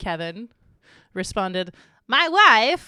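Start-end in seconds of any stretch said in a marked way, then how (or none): 2.1-2.9 shrill, booming, belted, very high, very loud comic voice. Reading a viewer's answer, quoting the reply: Borat voice. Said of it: "specifically said in Borat voice".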